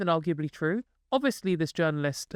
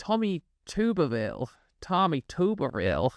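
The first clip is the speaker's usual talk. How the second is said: terrible, clumsy put-on American accent. Saying a name aloud in a terrible American accent. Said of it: "that was a terrible American accent".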